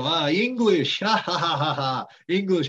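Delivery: taunting, loud, slow jeering ha-ha laugh. Retelling shop people pointing and laughing: imitating mocking laughter. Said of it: "they'd point to me and go".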